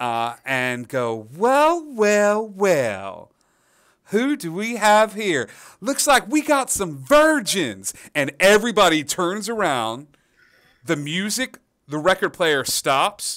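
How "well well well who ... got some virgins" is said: high, swooping, well drawn-out gnome voice. Voicing Bertha, a gnome who jumps onto the bar to greet newcomers: Bertha the gnome voice. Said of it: "a gnome will jump up onto the bar".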